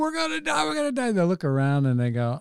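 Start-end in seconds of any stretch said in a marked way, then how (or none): 0.0-1.1 acted frantic panicked yelling, very high pitch. Retelling a funny scene where they keep yelling, imitating panicked yelling. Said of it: "they're still going".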